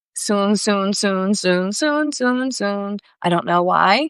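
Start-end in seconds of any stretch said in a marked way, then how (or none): 0.2-3.0 slow, drawn-out taunting, teasing tone. Repeating a word the way it came to them: teasing tone. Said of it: "Kinda like a teasing tone".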